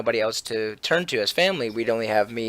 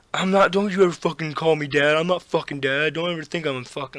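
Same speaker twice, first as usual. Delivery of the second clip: high, shouted tough-guy yelling; 5 semitones higher than usual. Retelling a fight where the brother yells back: imitating brother yelling. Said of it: "You're fucking yelling like dad".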